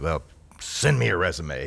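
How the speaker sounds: slow, gruff father voice. Retelling asking a man to date his daughter, giving his reply: imitating John's gruff voice. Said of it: "with this gruff voice".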